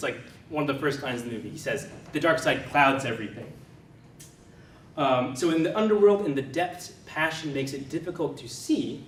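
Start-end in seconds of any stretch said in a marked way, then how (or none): none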